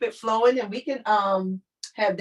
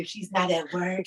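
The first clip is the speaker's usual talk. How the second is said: whispered, quieter; 2 semitones lower, 4 dB quieter than usual. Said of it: "And now I'm whispering for you".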